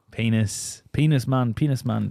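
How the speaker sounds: put-on Jamaican accent. Answering in a guessing game with a co-host, in a Jamaican accent. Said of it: "got a Jamaican accent and you're pointing".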